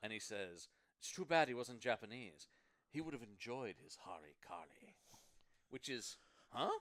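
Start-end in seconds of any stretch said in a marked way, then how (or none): 1.0-5.0 put-on posh, upper-crust British accent. Quoting a movie character's one-liner: Mister Parker's upper crust British accent. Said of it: "an upper crust British accent".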